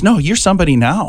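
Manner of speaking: ordinary delivery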